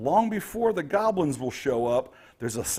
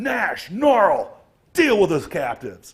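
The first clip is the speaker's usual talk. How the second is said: loud yelling, called out over distance; 3 semitones higher, 6 dB louder than usual. Voicing the boss who yells down the chamber: boss yelling. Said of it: "yell down the way".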